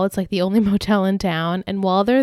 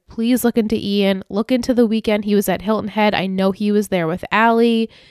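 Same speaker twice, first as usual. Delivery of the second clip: plain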